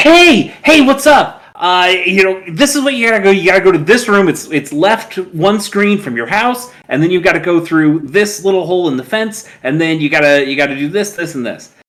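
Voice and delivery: high, loud, bouncy, over-eager, swooping excitable chatter. Retelling how the raccoon dad in a game gives hints: imitating an excitable raccoon dad. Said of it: "he is so excitable".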